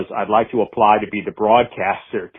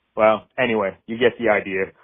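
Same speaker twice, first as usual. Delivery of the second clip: ordinary delivery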